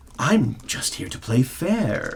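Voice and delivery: harsh, raspy, rasping voice. Narrating a scene, the rag woman answers the other woman: raspy voice. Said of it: "The rag woman rasps".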